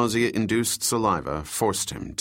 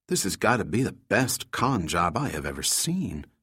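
plain reading voice

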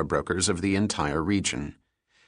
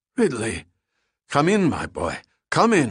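wheezy, high voice, wheezing out the words; 5 semitones higher than usual. Narrator reads a host greeting his guest at the penthouse door: Gutzman's wheezy voice. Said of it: "Gutzman greeted in a wheezy voice".

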